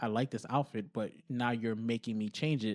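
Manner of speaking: ordinary talk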